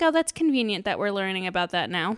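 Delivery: ordinary talk, nothing marked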